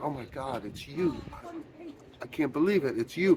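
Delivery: very quiet, swooping, hushed weeping voice. Retelling how a reporter greets the woman she came to interview, imitating someone weeping. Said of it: "she's weeping like".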